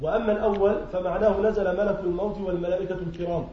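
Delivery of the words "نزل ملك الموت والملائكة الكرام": ordinary talk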